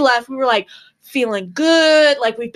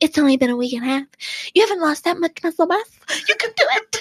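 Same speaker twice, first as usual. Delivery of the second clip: put-on whisper, pitched higher; 3 semitones higher than usual. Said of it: "whispering in my ear".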